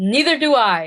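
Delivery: trying to sound angry. Asked to say the line angry, trying to sound angry. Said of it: "Say it angry".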